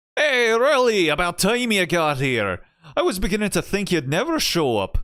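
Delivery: put-on edging into Scottish accent. Voicing a game character's lines aloud, slipping into a Scottish accent. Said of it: "I'm starting to get a little Scottish there".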